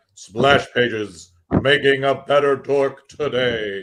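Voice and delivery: really overly dramatic, theatrical delivery. Pitching an idea to a co-speaker, deliver it really dramatic. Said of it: "make it really dramatic".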